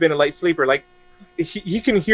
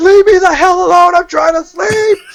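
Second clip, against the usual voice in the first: very high, shrill, drawn-out all-out acted scream; 13 semitones higher, 6 dB louder than usual. Retelling yelling at a presence over the bed at night: imitating own scream. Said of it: "'Cause I screamed at the top of my lungs".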